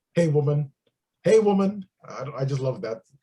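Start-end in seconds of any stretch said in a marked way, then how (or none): 0.2-1.9 taunting, challenging delivery. Quoting a favorite movie line: Mister T as Clubber Lang. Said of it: "that's one of my favorite movie quotes when he's like".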